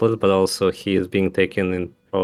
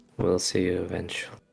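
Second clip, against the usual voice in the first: whispered under the breath; 7 dB quieter than usual. Voicing a character as creatures approach him: whispering under his breath. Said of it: "Alukir just whispers under his breath".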